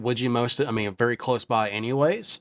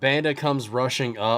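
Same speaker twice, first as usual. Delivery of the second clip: ordinary delivery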